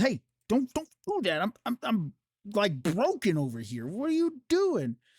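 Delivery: angry, fed-up, furious, high-pitched voice. Narrating a game turn, the storyteller voices a character pushing someone away, angry. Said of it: "she very angrily kind of pushes him".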